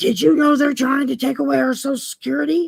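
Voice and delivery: frantic, high, panicked, alarmed delivery. Retelling a man who phoned in a panic, acting out his panicked screaming. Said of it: "called me up in a panic, screaming in the phone".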